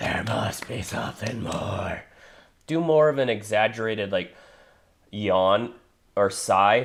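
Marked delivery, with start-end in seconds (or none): 0.0-2.0 soft, unvoiced whisper with no force. Showing a learner how to say the line: whispering. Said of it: "when you whisper it".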